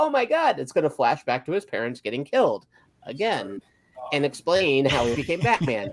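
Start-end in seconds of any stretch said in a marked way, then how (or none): none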